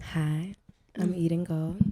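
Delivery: sensual voice. Introducing herself to the group: sensual voice. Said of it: "your voice got sensual as hell".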